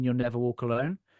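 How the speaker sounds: ordinary talk, nothing marked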